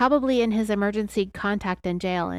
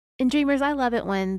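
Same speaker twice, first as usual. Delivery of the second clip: plain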